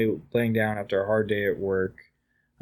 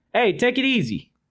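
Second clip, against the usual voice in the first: put-on New Jersey accent, pitched way up; 12 semitones higher than usual. Voicing a figure who swivels around on the desk chair, new jersey kind of accent. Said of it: "New Jersey kind of accent".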